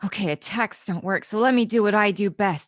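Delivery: muttered aside, mumbling under her breath. A player speaks as a scared character gathering her courage; muttering to herself. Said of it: "she kind of mutters to herself".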